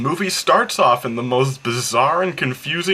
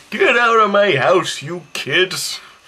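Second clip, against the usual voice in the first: put-on slow, cranky old-man ghost voice; 5 semitones higher than usual. Imagining a horror film as a sitcom with a ghost: put-on cranky old ghost voice. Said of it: "this old man who's a ghost. He's like".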